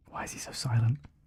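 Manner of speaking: soft, hushed whispered aside.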